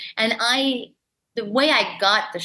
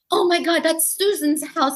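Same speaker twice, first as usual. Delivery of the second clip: acted, breathless, high, excited freaking out; 8 semitones higher than usual. Retelling running up and down the street on the first day: imitating own freaking out. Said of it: "freaking out".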